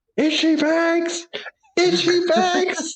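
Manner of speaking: high, slow, gleeful excited shouting. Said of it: "jumping up and down and shouting".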